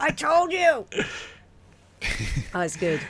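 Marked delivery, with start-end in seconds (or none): 0.0-0.9 loud high comedic yell. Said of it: "He's like".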